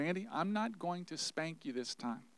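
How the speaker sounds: very soft, gentle, tender, loving voice. Andy retells what a man said after taking him aside, retelling a gentle, loving voice. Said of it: "in a very gentle, loving voice".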